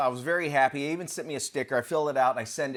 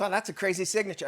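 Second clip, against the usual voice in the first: mock, high, broken up by laughter throughout; 6 semitones higher than usual. Retelling a lady's remark about the signature, imitating her laughing while talking. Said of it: "she was laughing so much".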